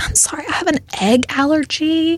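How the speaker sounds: disguised fake voice. Acting out a prank call to a restaurant: disguised voice. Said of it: "We gotta disguise our voices".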